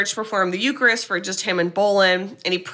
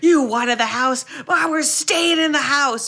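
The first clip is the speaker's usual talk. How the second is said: high-pitched, unhinged screaming outburst; 6 semitones higher than usual. Retelling a story about George and Kathy, retelling George screaming. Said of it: "And George screams".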